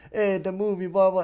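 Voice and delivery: put-on Jamaican accent. Retelling how a man answered a question on camera, in a Jamaican accent. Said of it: "started talking in a Jamaican accent".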